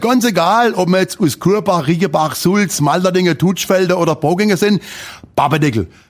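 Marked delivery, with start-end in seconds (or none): 5.3-5.9 quick, crisp, brisk snap of a word. Showing how people from these villages say Babadickel: quick, crisp delivery. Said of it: "zackig, flott, mit Tempo".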